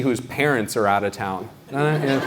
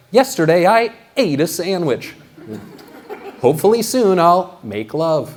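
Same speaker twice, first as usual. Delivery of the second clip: slow, measured newscaster broadcast delivery; 3 semitones higher than usual. Speaker mocking how everyone on the news sounds, in a news anchor voice. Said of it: "I love that news voice".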